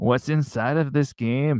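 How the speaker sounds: put-on local Texas border accent. Retelling what border patrol people asked near the border: imitating the locals' accent. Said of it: "I'm just using the locals' accent".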